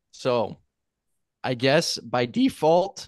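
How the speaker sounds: voice cracking and breaking mid-phrase. Host wrapping up a guessing round with the others, voice cracking. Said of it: "voice crack".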